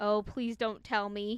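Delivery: crying out in terror. A boy answering his father's question, crying out in terror. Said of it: "Caught by a gust of terror, Peter cried".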